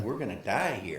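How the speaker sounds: usual speaking voice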